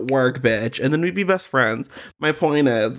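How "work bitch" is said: ordinary delivery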